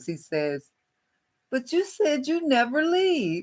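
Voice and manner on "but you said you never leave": very high, childish, childlike put-on voice. Retelling what your last husband said when you were leaving him, imitating a husband's childlike voice. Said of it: "he said in this childlike voice".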